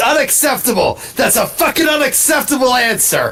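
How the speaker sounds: imitated screaming. Retelling an angry reaction while watching a show: imitating a scream. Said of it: "I just immediately screamed".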